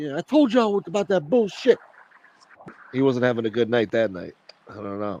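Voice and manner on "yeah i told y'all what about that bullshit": angry, fed-up, high-pitched rant. Retelling how Tracy Morgan snapped at his crew on the stairs: imitating angry Tracy Morgan. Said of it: "he was pissed off at his crew".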